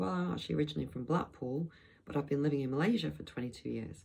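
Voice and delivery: ordinary delivery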